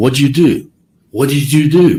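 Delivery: put-on insistent, demanding yell. Telling the jury what happened, imitating someone yelling. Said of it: "he starts yelling at Terry".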